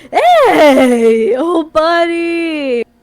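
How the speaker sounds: gleeful, very loud, swooping pitch. Narrating an old buddy slinging an arm around the listener, gleeful Troy voice. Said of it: "a gleeful voice says".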